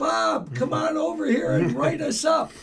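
put-on older woman hollering, very high and loud. Retelling how a lady across the street called out during a walk: imitating an older lady yelling. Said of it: "older lady, yells".

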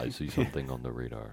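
deep, soft radio-announcer delivery. Voicing the radar guy for friends, NPR radio announcer voice. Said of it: "It's like an NPR radio announcer".

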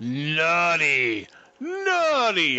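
put-on yelling. Telling a story about a movie scene and acting out what a character shouted while firing, imitating someone yelling. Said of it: "It's like he's a Dalek".

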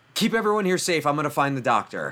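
high-pitched shouted voice. Voicing a character shouting to Carrie in a bar: in-character shout. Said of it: "Travis shouts to Carrie".

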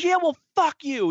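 angry screaming, pitched way up, very high. Retelling a stranger yelling back at the girlfriend, retelling a screaming yell. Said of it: "in a screaming match with some dude".

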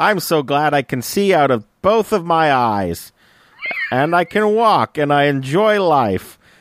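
high, drawn-out, plucky 1930s newsboy voice. Continuing the joke about the young character: 1930s newsboy voice. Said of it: "talking like it's the nineteen thirties".

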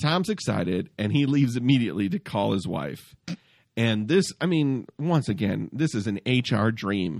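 ordinary talk

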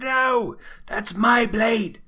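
very high, very loud, drawn-out anguished scream. Voicing a character who rushes forward for her blade: screaming. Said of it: "screams out".

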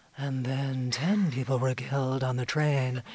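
mock breathy delivery. The speaker imitates a network colleague reading a story, intentionally breathy voice. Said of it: "in an intentionally breathy way".

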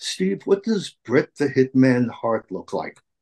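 polished, refined, sophisticated put-on English accent. Retelling a producer's phone question, imitating an English accent. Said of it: "he had this English accent".

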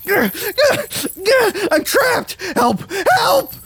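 very high, very slow, drawn-out, frantic cries. Trapped character tells his companion he is panicking, panicking and crying for help. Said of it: "I'm panicking".

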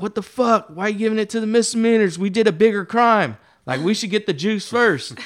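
high, loud, outraged and indignant voice. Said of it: "everyone in the felony cell was like".

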